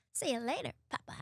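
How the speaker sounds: weird cartoon voice, whispered, breathy and hushed. A voice actor showing how they changed a cartoon character's voice: weird cartoon voice. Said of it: "So I changed her voice to like".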